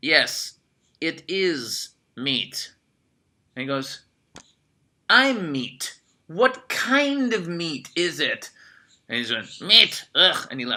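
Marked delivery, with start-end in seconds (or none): 0.0-2.7 put-on Eastern European accent, much slower. Retelling what a waiter said, in a standard Eastern European accent. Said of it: "the standard Eastern European".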